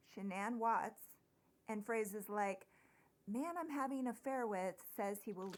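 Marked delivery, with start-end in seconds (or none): none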